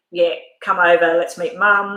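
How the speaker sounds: normal talking voice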